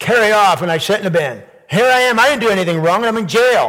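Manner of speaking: sour, resentful snip. Voicing a prisoner who says he did nothing wrong: snippy, bitter tone. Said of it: "Don't you just hear the snip in his voice and the bitterness?".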